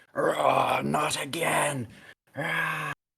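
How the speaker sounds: very slow, huge, rough, booming giant yell. Voicing a character who has just poofed into existence, great big booming yell. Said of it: "yelling in this great big booming voice of".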